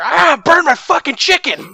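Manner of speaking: put-on shrill, very high, loud, panicked yell. Retelling a teammate's outburst during a ship fire: imitating someone upset. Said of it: "So upset".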